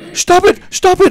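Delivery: play-acted frantic, freaked-out, very high outburst. Recounting an incident where a man freaked out at them: retelling someone freaking out. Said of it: "he freaked out".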